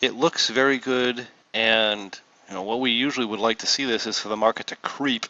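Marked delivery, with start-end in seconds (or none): 4.8-5.3 strong stress on the word creep. Explaining how the market should move for a trade: stress on CREEP. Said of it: "I emphasize the word creep".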